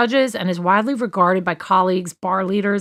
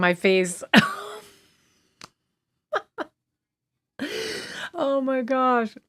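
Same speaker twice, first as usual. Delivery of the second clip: can't stop laughing, higher and quieter; 6 semitones higher, 5 dB quieter than usual. Reacting to a funny comment in the chat, laughing while talking. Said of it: "I can't stop laughing".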